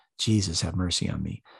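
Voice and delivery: quiet whisper under the breath. Showing how a short prayer is said: whispering under the breath. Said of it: "I just whisper it under my breath".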